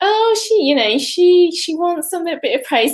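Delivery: put-on very high-pitched, playful, teasing, mocking voice. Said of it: "sort of make fun".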